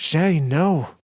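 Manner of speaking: high, loud shouted yell. Narrating a story, a character runs up to her friend, yelling. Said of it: "Aisha yells".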